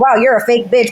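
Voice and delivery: ordinary talk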